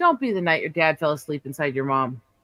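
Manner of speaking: mock delivery played completely straight, deadpan. Retelling a movie scene where a character turns to his partner, retelling a deadpan line.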